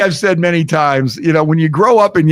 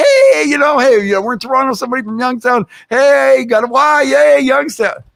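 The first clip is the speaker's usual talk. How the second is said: so-nice, cheery, high sweet friendly voice; 9 semitones higher than usual. Retelling the sister greeting a stranger in a bar: imitating a friendly, nice tone. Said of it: "she was so, like, nice about it".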